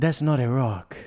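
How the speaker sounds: put-on hammy, overdone South American accent. Quoting a movie line after being asked: Antonio Banderas accent. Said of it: "Do it in an accent, please".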